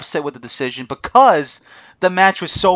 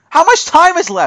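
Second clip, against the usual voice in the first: mock frantic yell, loud and high; 13 semitones higher, 5 dB louder than usual. Retelling watching the match's final minutes: retelling his own screaming. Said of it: "I'm standing there screaming".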